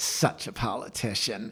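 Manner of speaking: acted talking through gritted teeth. Retelling what Mom said as she turned to Dad, imitating clenched-teeth talk. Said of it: "with her teeth clenched".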